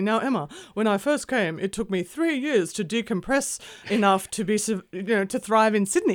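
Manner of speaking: high, loud, clumsy, badly put-on British accent. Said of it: "I'm gonna do a terrible job of his accent".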